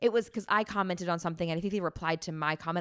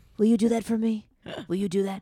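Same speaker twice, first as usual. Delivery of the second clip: put-on ranting voice, louder; 6 dB louder than usual. Retelling a public tirade about following a wife: Alec Baldwin impression. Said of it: "You do a good Alec".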